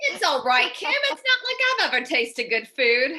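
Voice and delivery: put-on poor British accent. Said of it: "not exactly the best British accent".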